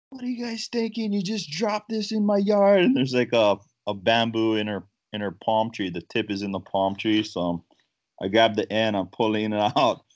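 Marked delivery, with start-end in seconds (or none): 0.1-2.8 very high, full-on screaming tirade. Retelling a lady yelling at his two guys, imitating a woman screaming. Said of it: "just screaming at my two guys".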